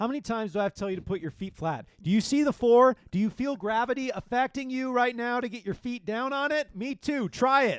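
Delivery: very high, very loud, shrill sarcastic scolding. Showing what a teacher might say to students about feet: sarcastic scolding of students. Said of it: "I should use that, like, sarcastically".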